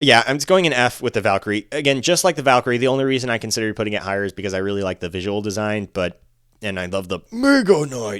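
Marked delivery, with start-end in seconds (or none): 6.8-8.2 terrible, clumsy, slow, drawn-out character voice. Placing game cards in tiers, doing a terrible Mega Knight impression. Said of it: "terrible, terrible impression I did there".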